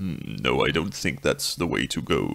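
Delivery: very low, deep radio announcer voice, musing. Greeting everyone with good morning, sound like Doctor House mulling over a diagnosis. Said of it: "I sound like Doctor House mulling over some diagnosis".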